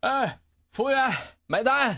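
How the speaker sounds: feeble, weak, lifeless voice. Narrating a story, a diner too full to move calls for the bill, feebly. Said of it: "撑得有气无力地说了一句".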